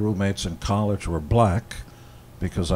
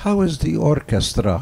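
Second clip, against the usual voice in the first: put-on heavy Hungarian accent, raised; 7 semitones higher, 5 dB louder than usual. Quoting Mom's question about the band, in a thick Hungarian accent. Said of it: "the thick Hungarian accent".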